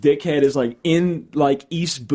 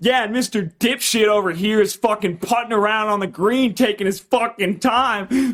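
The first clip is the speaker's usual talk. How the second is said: loud voice meant to be overheard; 7 semitones higher than usual. Retelling how Trey talked so golfers on the green could hear: imitating Trey talking loudly. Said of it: "he's talking really loudly".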